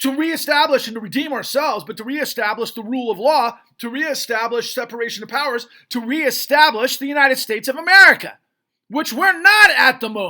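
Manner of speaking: outright shouting, loud and high-pitched. Addressing the audience directly about purging corruption, shouting. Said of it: "I'm shouting. I apologize".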